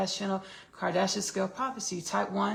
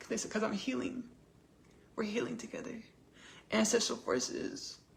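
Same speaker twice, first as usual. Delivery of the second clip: tearful, crying voice, weeping through the words; 2 semitones higher, 5 dB quieter than usual. A speaker describing ancestral forces to listeners, crying while speaking. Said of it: "I don't know why I'm crying".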